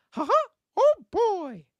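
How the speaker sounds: sing-song voice going way up in pitch. Reading super chats, starting with the classic Mickey Mouse voice. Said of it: "I always got to start with the classic Mickey Mouse, like".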